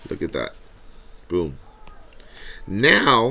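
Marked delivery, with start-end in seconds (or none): 2.7-3.3 raised voice cracking mid-word on now. Explaining equations while copying one down: voice cracking. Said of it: "my voice just cracked".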